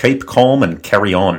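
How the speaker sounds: put-on South Welsh accent. Showing off accents on request, saying a line in a British accent. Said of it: "how that's different from the Australian".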